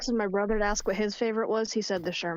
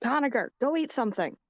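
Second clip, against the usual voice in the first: pitched-up voice calling out, projected across distance; 5 semitones higher than usual. Playing a character who yells at Conager from over here: yelling across the room. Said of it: "I'm just gonna yell at him from over here".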